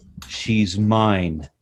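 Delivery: play-acted stern, flat, firm no-arguments tone. Retelling the wife's reply about keeping the kitten: imitating a stern voice. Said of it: "my wife very sternly said".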